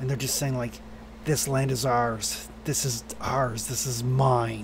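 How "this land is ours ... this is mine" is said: hissed whisper, lower pitch. Voicing lesser demons that snap with their beaks: demons whispering. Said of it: "they're whispering".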